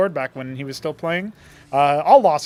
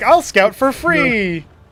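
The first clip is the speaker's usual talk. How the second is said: high-pitched, very slow drawn-out drawl; 8 semitones higher, 5 dB louder than usual. Commenting on play, voicing the Anciel as it scouts: Anciel voice. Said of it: "that was a good impression".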